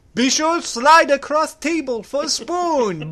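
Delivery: bad fake Chinese accent, loud and high. Acting out a director cooking oatmeal: put-on Chinese accent as John Woo. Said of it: "I can't do a Chinese accent very well".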